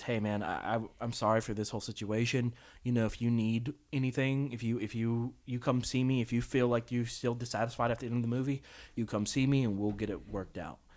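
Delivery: low, quiet, hushed stage whisper. Retelling how a manager at the movies half-whispers to a man, imitating someone half-whispering. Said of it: "he whispers to the guy".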